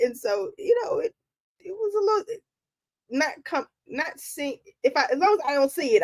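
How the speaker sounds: stammering, tripping over words, pitched a little high. A podcast speaker explains themselves to listeners: stuttering. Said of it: "I'm I'm stuttering".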